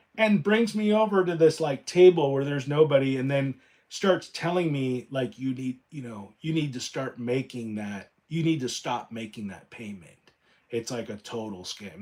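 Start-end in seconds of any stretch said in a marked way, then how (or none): 5.4-12.0 imitated whisper, quieter. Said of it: "she starts whispering".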